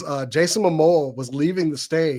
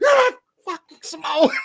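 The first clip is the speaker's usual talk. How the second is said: very high voice, pitched way up; 12 semitones higher than usual. Retelling the friend's retort in the press pool: imitating a friend. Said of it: "and he in the press pool goes".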